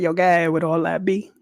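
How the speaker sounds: mock sarcastic delivery. Retelling a coworker's reply at work: imitating Marie's sarcastic tone. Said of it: "in her sarcastic way was like".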